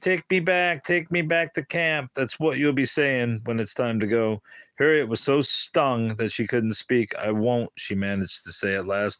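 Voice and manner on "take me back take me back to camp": mean, nasty, mocking falsetto. One character taunts another by imitating her; mean falsetto mimicking Harriet. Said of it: "meanly in falsetto, Edie mimicked Harriet's voice".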